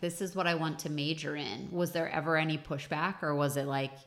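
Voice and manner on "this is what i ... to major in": ordinary delivery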